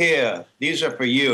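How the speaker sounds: put-on English accent. Retelling a woman handing them something before going on stage: fake English accent. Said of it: "she put on a fake English accent".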